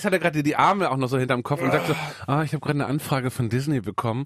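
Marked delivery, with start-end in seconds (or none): 2.3-4.3 offhand, bored, unimpressed, can't-be-bothered tone. Describing Jan Böhmermann leaning back, arms behind head: bored Jan Böhmermann voice. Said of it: "der gelangweilte Ton von Jan Böhmermann".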